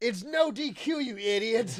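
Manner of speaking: mock high, drawn-out shriek with stretched words. Retelling how Jericho screams at the ref: imitating Jericho screaming. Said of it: "Jericho's just screaming at him".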